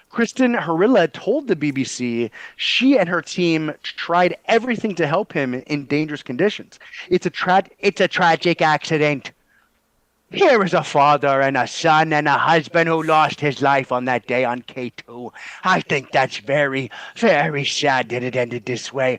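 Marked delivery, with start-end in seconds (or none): 7.0-19.1 solid put-on Irish accent. Reading out a quote from a news story: put-on Irish accent. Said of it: "That's a really solid Irish accent".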